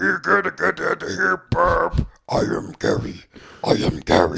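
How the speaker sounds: slow, deliberate, rough, creaky put-on voice. Acting out a scene, voicing the good friend Gary: imitating Gary. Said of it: "I can't do a good Gary impression".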